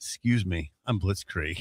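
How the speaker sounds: put-on smooth pickup voice. Performing a pickup line at a bar, asked to do it again: performing Blitzkrieg's pickup line. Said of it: ""[name], do it again."".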